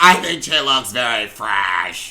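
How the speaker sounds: put-on voice with a snide, shady tone. Quoting a comment on how someone looks, in Brooks voice. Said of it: "that's my Brooks voice".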